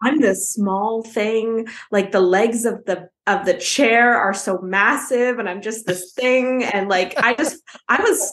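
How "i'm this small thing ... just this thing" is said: usual speaking voice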